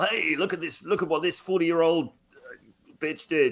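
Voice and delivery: put-on American accent. Mocking online content, imitating someone: put-on american accent. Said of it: "trying to throw in, like, a, a, an American accent".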